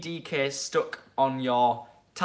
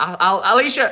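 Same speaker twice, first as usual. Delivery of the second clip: ordinary talk, nothing marked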